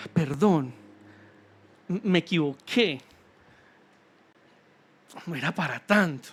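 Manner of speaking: small, gentle, soft, hushed little voice. Acting out the soft little voice that appears after the outburst: soft little voice. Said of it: "la vocecita suave de".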